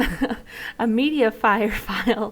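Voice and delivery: slow, giggling, laughing-through delivery.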